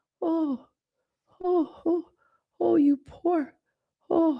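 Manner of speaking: mock, very high, cooing pitying sympathy. Imitating visitors who come to a dying person: imitating pitying visitors. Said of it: "visited by anybody with this energy of".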